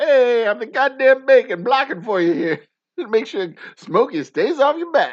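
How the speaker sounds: put-on Armenian-accented speech. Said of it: "that would possibly be his accent".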